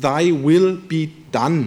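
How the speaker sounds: English, slowly phrased.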